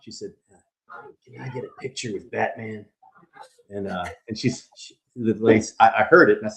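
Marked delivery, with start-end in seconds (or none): 1.2-2.8 put-on weak, frail voice, much quieter. Retelling what a weak woman in a wheelchair said, imitating a weak voice. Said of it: "she was very weak".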